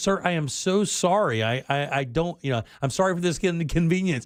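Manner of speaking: acted-out, profusely sorry, very apologetic voice. Retelling a phone call about a cable outage, the speaker is imitating an apologetic cable guy. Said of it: "he was very apologetic".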